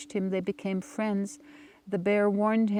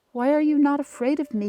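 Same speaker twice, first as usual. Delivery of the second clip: high, loud hissing snake voice; 6 semitones higher, 6 dB louder than usual. Reading a story aloud, the rattlesnake questions the boy: hissing snake voice. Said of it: "he hissed".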